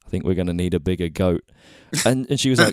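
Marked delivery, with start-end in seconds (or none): none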